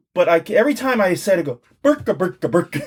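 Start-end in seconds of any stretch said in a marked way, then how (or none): 1.9-2.8 full put-on Swedish-sounding patter. Speaker admits he can't help saying the name this way, in Swedish Chef voice. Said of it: "I go full Swedish chef on this shit".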